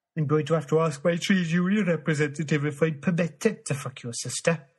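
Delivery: put-on loud Welsh accent from Cardiff. Doing one stop of a quick UK accent tour, in a Cardiff accent.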